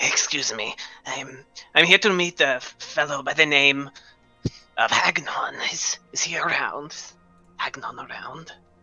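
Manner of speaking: slow, loud stage whisper meant to carry. A character asks where a fellow is, hoping to attract attention, in a loud stage whisper. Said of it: "he's going to say it loud".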